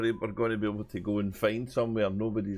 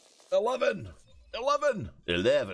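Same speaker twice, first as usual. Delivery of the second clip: very high, swooping put-on Scottish accent; 10 semitones higher than usual. Retelling a sketch about two men in a voice-activated lift, imitating a Scottish accent. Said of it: "it can't understand Scottish".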